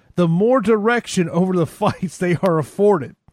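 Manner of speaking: reading aloud while laughing. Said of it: "I can't even read this without laughing".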